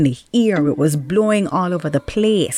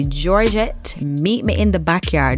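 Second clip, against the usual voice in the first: ordinary talk, nothing marked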